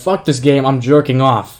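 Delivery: put-on really squeaky, very loud kid yell. Recalling a Reddit clip of a kid killed in a game, retelling a squeaky kid's yell. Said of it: "in a really squeaky voice".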